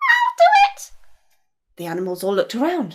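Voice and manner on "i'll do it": tiny, very high little voice. Narrator reading the flea's offer to the animals, tiny little voice. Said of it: "a tiny little voice said".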